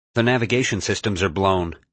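plain reading voice

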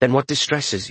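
ordinary talk

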